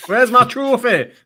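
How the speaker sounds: shrill, very loud, high-pitched put-on Cardiff accent. Joking in conversation, voicing Claire, imitating Claire's Cardiff accent. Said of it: "That was my Claire in Cardiff accent".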